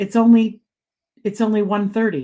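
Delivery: ordinary delivery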